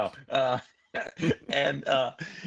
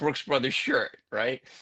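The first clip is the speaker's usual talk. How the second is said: plain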